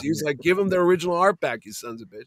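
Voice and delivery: normal talking voice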